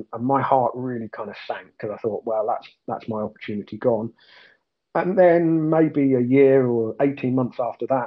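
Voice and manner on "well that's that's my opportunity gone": normal talking voice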